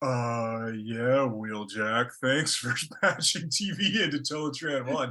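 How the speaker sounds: imitated groggy, drowsy, sedated-sounding voice. Retelling a character's line, imitating a groggy sedated voice. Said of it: "coming down from being sedated voice".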